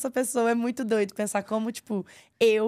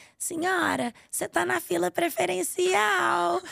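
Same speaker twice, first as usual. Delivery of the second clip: put-on frail, high, creaky little elderly lady's voice; 7 semitones higher than usual. A pregnant woman describes her video, voicing an old lady in a queue: little old lady voice. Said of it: "faço uma vozinha da senhorinha assim".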